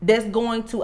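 ordinary talk

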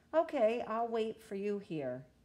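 slightly impatient, exasperated, with a sigh underneath. Mommy answers Calliou after he says he needs the bathroom, sighing a little impatiently. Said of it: "Mommy sighed a little impatiently".

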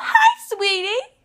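put-on squeaky, really high-pitched teenage girl voice. Imitating how a teenage girl talks: really high-pitched squeak. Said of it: "which is a really high-pitched hi".

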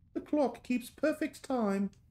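put-on English accent, high and slow. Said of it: "I get to do my British accent whenever I'm reading".

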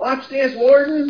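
screamed cry, pitched very high. Narrating a character firing two more shots: screaming out. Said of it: "as he screams out".

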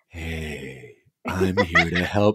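creepy, salesy, put-on helpful tone, "hey" drawn out. Complaining about creepy marketing, the speaker mimics a marketer's changed tone of voice. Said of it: "the tone of voice changes too".

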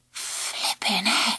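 said on a breath. After he crashes down in the rhubarb patch, she breathes to the narrator. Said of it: "she breathed".

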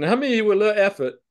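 playful teasing. Showing an audience a selection button, asking them a question: joking. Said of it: "I'm saying this jokingly".

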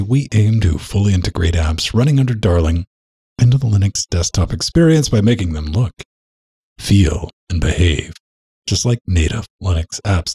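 normal talking voice

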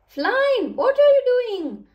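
shrill, very high, loud crying out. Reading Edward's words to Flying in a story, crying out. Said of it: "Edward cried out".

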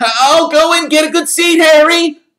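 very high, very loud, shrill piping voice. Reading a story aloud, Colin calls after Harry, in Colin's piping voice. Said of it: "called after him in a piping voice".

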